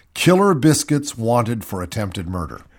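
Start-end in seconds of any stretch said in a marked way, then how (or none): none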